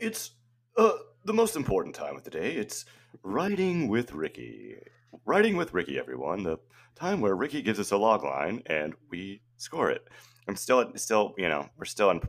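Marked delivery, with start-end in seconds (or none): 0.0-10.1 pitched-up, swooping tv game show host voice. Podcast host introducing the Writing with Ricky segment, in a game show host voice. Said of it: "That sounded like a game show".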